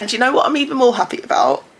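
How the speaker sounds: choked-up, tearful, high-pitched crying voice. Telling viewers happy house news, crying while talking. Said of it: "she's crying again".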